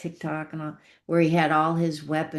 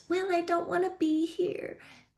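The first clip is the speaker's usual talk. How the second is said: put-on tiny, very high little-kid voice; 14 semitones higher, 4 dB quieter than usual. Retelling what a little boy said: little child's voice. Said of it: "He he said the little voice".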